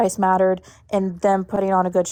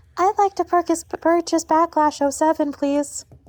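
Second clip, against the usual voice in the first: put-on odd, high little-girl voice; 9 semitones higher than usual. Retelling calling the cable company as a little girl, in a weird little girl voice. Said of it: "having like the weirdest little girl voice saying".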